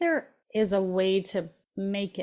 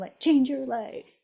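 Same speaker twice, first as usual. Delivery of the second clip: mocking, fast, higher-pitched, hyped-up dude voice. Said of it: "the dudes are like".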